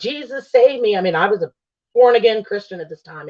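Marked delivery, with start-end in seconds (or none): 0.0-1.0 mock screaming, pitched up high. Retelling a frightening night when the room moved: imitating own screaming. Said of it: "And I'm screaming and I'm like".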